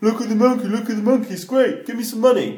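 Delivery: high, pushy sales patter.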